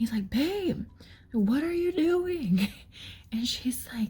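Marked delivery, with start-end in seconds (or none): 0.3-2.7 mock shouting, high and drawn out. Retelling a man in the hallway yelling down the stairs, imitating a man yelling. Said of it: "he's like yelling down the stairs".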